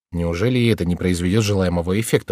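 plain reading voice

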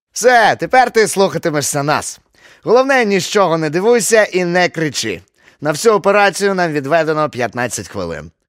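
very loud, high, jolly, beaming, grinning comic voice. The always-cheerful hare speaks to the boys, comically smiling. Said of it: "комедно усміхався".

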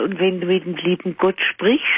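ordinary talk

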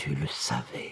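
slow, breathy whisper with words let fall. Recounting how she let three words fall slowly: slow breathy whisper. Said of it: "laissait tomber lentement dans un souffle ces trois mots".

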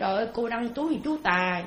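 ordinary talk

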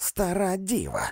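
high-pitched, bawled, shouted outburst. A woman hurls an insult at a man: bawling. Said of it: "горлала місіс Крик".

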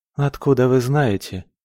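bitterly amused. A young woman answers a man who calls her a decent girl, bitter smirk. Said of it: "Горько усмехнулась она в ответ".

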